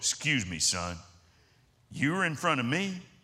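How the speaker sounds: large, big-man voice. Retelling what a big man said to a kid who ordered ahead of him, big voice. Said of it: "I heard this big voice go".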